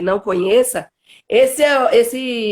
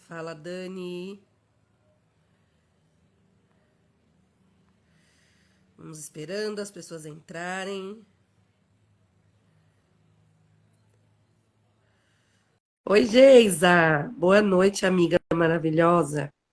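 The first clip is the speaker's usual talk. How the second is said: hoarse, raspy, sick-sounding voice, lower and quieter; 3 semitones lower, 7 dB quieter than usual. Greeting people as they join the live, hoarse voice from flu. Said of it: "tô com essa voz rouca".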